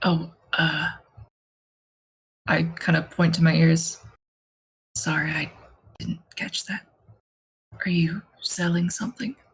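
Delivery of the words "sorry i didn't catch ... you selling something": natural low, quiet speaking voice. Speaking in character to a distant woman who waved: low speaking voice. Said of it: "kind of low speaking like that?".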